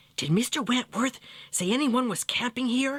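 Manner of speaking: whispering. Reading a story aloud, voicing a worried question in the cabin: whispering. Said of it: "asked Joey in a whisper".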